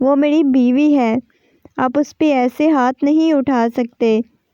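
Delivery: ordinary delivery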